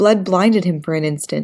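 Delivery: plain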